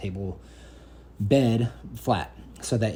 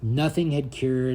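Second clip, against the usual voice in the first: plain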